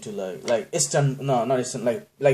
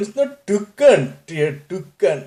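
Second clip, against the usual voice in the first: put-on Indian accent, laid on loud and slow; 8 semitones higher, 6 dB louder than usual. A speaker gives listeners a little taste of his Indian accent. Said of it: "People love it when I do that".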